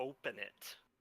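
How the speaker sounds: threatening, intimidating tone. Acting a character demanding another character open the vault: intimidating. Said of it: "I'm trying to intimidate".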